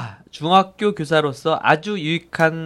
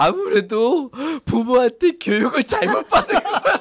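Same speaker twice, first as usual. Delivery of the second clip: put-on, very high, sobbing crying child's voice; 10 semitones higher than usual. A father retells his child's tearful reply to him, imitating his child crying. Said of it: "막 울면서".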